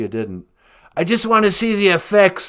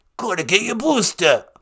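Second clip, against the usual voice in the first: put-on New Yorker accent; 5 semitones higher than usual. Imitating a man the speaker is describing: New York accent impression. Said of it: "he's got like a real um New York accent".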